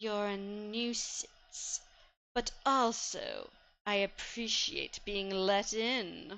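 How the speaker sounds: weirdly delayed, very slow, drawn-out speech. Storyteller voicing a grinning woman who addresses the listener: slow, delayed delivery. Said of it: "she talks slowly".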